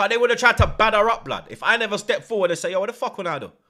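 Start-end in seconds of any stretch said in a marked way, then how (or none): 2.7-3.5 put-on Jamaican patois accent. Retelling stepping forward to confront people, put-on jamaican accent. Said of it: "And put on the accent".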